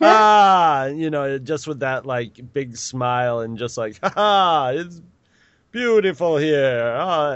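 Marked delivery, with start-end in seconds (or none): 4.0-7.4 unhurried, high, slow put-on Jamaican accent. Imitating the man in a Jamaica ad campaign: put-on Jamaican accent. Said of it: "anytime they heard a Jamaican accent".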